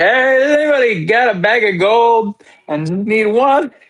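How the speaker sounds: loud, high-pitched calling-out shout. Narrator voices a character calling out to everyone around: shouting loudly. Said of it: "he shouts like".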